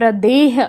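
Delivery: प्रदेह said slowly and loudly, heavily weighted.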